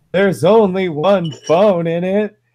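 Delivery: put-on crying child's voice, very high and tearful. Retelling a fourth-grade boy answering his mom through tears: imitating a boy crying. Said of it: "he goes through his tears".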